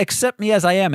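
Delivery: ordinary talk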